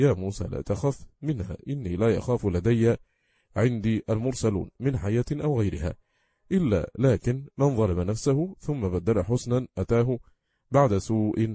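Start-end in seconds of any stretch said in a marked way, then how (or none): none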